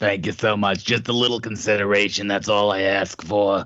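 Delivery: talking goblin character voice. In a role-play, the goblin pouch replies to Mervin's apology, goblin pouch voice. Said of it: "established voice for the goblin pouch".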